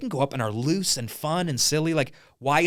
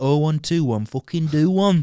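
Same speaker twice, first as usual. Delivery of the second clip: Birmingham accent, Brummie. Showing off the accents he can do, in a Birmingham accent. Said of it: "That's Birmingham, isn't it?".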